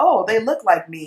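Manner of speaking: normal talking voice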